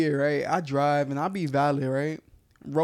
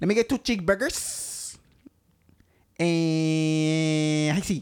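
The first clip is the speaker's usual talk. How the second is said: Spanish-accented put-on voice. Retelling a TikTok video of a Spanish guy: imitating a Spanish guy's accent. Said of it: "It's a Spanish guy".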